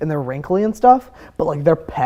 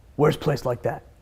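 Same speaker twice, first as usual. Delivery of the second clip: deep put-on voice, quieter; 2 semitones lower, 7 dB quieter than usual. Retelling what a man asked the speaker, trying a deep voice. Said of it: "I'm trying to do like a deep voice".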